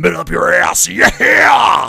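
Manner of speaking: loud, slow, rough, creaky, drawn-out rock delivery. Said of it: "my best [name] impression".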